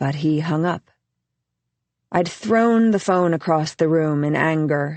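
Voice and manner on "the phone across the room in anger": ordinary delivery, nothing marked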